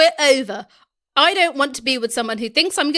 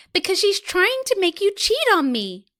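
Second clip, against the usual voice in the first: high, put-on girly girlfriend voice; 6 semitones higher than usual. Playing both sides of a couple's argument, girly voice as Tina. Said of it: "girly voice for Tina".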